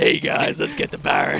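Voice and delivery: rough, creaky, rasped out. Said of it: "Why are you better than that".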